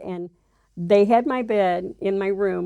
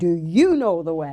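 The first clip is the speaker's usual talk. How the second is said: mock firm, insistent, commanding delivery; 2 semitones lower than usual. Retelling a voice heard all around: imitating a loud, firm voice. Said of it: "was very loud, firm".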